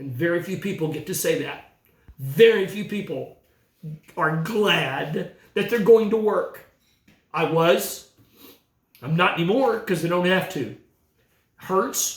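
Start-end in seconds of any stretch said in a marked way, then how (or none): 2.2-12.2 choked-up, tearful, with "glad" drawn out. Speaking to the audience about no longer going to work: crying. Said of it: "I'm crying".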